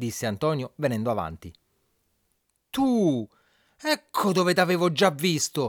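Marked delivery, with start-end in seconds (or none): 2.7-5.7 high, drawn-out angry shout, composure cracking. A man recognizes the husband who has just stepped forward: shouting, losing his calm. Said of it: "gridò Sorrisone perdendo per un attimo la calma".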